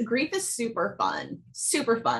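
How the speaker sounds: high, sing-song, heavily ironic, totally sarcastic. Answering a question about grief after leaving an MLM: sarcastic. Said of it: "I'm saying that totally sarcastically".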